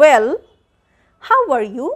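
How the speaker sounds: loud "well" followed by a short pause. Teacher showing students a short pause in a sentence: short pause after well. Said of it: "I'm giving a short pause here".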